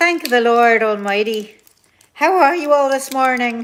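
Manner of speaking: very loud put-on Irish brogue. Live on Instagram, greeting followers this morning: mock Irish accent. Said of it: "Why am I talking in a mock Irish accent?".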